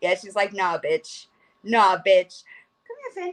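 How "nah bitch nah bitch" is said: drawn-out, put-on, grumpy, annoyed cat voice. Voicing the cat's reply after picking her up: voicing the cat as mad. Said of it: "She's gonna be mad at me now".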